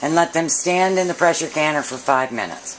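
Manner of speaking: ordinary talk, nothing marked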